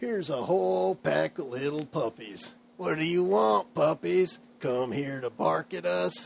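sneering, growled, snarling thug-like jeer. Narrating, voicing one of the scarlet-cloaked thugs as you approach: snarling thug. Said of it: "he snarls".

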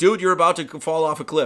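loud, yelled, alarmed shouting. Describing a picture where a dog warns a fool: imitating a dog yelling a warning. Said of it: "A dog's literally yelling at him".

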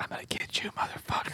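soft, unvoiced, menacing whisper.

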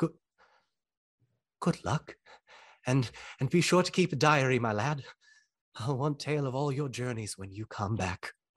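hushed put-on hobbit voice. Voicing Bilbo as he speaks to Frodo: quiet Bilbo voice, almost under breath. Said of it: "not quite under his breath, but maybe not loud enough for Frodo to hear".

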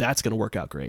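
normal talking voice

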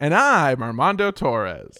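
clean, very slow, drawn-out delivery with swooping voice. Doing a clean impression of a guest introducing himself: imitating Armando Torres. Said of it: "your best Armando Torres impression".

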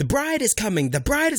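acted-out yelling. Retelling announcing the bride to the crowd: imitating yelling to a crowd. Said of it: "yelling that, like, to the crowd".

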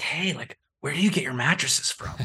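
quiet whisper. At a vacation rental conference, someone asks the speaker something, retelling a whisper. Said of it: "somebody kind of whispered like".

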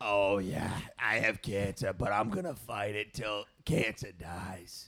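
put-on raspy reality star voice. Joking about her illness in a Big Ange impression: Big Ange voice. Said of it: "If you do the Big Ange voice".

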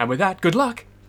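rushed, run together. Retelling how an actor delivered his line: all at once, run together. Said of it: "But he says it like all at once".

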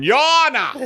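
put-on Southern gentleman accent. Imagining the other speaker representing himself in court: put-on Southern gentleman voice. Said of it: "like a Southern gentleman going".

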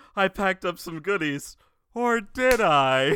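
high, theatrical, vamping eccentric aunt voice. Watching a movie, quoting the aunt character's big line, imitating the eccentric aunt. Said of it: "That's kind of like her big old dialogue".

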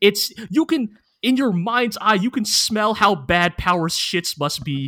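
ordinary talk, nothing marked

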